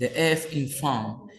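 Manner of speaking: ordinary talk, nothing marked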